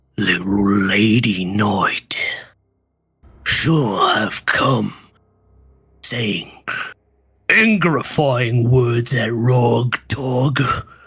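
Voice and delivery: big brute monster growl on every word. Ogre pins the Lady Knight against the cave wall: growling Rog Dog ogre voice. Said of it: "as it growls".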